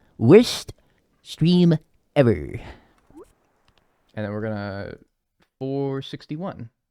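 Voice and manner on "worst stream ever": swooping, sing-song cartoon voice with big pitch swings. A streamer on stream puts on the Comic Book Guy voice. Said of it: "I'm doing the voice of the comic book guy from The Simpsons".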